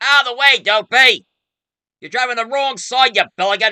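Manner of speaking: put-on drunken yelling, high and loud. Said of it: "you hear him yelling".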